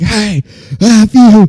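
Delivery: high, dumb, funny, goofy holler. Retelling how a friend leaned out the car window: imitating someone screaming. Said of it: "he starts screaming at the car next to us".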